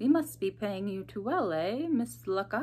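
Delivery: sly, crafty, insinuating tone. Narrator reads Mrs. Meeching questioning Aunt Twice about arriving by cab, sly. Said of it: "Mrs. Meeching's voice suddenly took on a sly quality".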